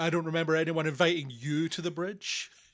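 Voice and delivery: loud, mock, really condescending tone. Quoting the first officer as she speaks to him: imitating a condescending officer. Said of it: "She says, like, really condescendingly".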